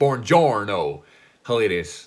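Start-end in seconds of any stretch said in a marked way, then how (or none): 0.0-1.0 put-on loud, belted-out southern American accent. Retelling a film scene where Brad Pitt pretends to be foreign: Brad Pitt's southern American accent. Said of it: "that really southern American accent".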